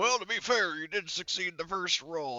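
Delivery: drill sergeant-style voice. During a dice game, the speaker remarks on a player's roll in Gunny's voice. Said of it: "I'm doing Gunny's voice for that".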